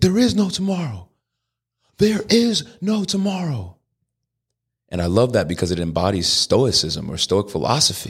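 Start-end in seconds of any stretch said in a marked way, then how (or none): 0.0-3.8 very high, urgent yell. Retelling a Rocky movie scene: imitating Apollo Creed yelling. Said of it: "he's yelling at Rocky".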